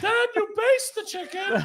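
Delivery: pitch pushed way up into a squeak. Continuing a cooking bit, slipping into a High Pitch Eric voice. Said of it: "you just went from Julia Child to High Pitch Eric".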